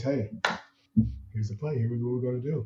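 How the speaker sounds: calm, even, level tone, low and soft. Retelling how Andrew talked in must-have situations: imitating Andrew's calm, steady tone. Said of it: "he would always talk just like this".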